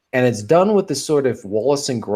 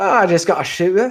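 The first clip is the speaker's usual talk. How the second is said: put-on Cockney accent, pitched up; 9 semitones higher, 3 dB louder than usual. Asked to do a cockney accent, answering a question about his gun in a cockney accent. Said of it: "TJ, do a Cockney accent".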